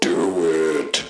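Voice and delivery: low, quiet, hushed booming voice. Retelling a scary slideshow, imitating a voice the speaker heard: low, quiet booming voice. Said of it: "a low, low, quiet voice saying".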